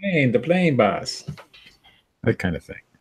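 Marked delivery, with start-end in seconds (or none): 0.0-1.2 high-pitched little-fella announcer call. Explaining an old show, quoting the little announcer: imitating the little island announcer. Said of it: "and you say".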